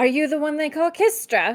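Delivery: challenging, defiant dwarf voice. The game master voices a dwarf calling out to the party, saying it really loud. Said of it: "And she says that really loud".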